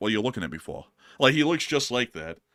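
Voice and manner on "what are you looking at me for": put-on New York accent, faster pace. Imitating that guy on TikTok to show who someone looks like, in a New York accent. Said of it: "that guy on uh on TikTok who does like that New York accent".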